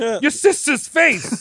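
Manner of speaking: fake Italian-sounding Jersey accent, high. Picturing a guy from Jersey, the speaker mimics him, imitating a New Jersey accent. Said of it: "That does sound very Italian".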